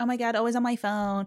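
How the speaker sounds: full-on, very American lady voice. Mimicking a TV character complaining about her phone: imitating a very American lady. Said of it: "the American lady who's just so Ameri-".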